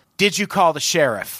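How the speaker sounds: ordinary delivery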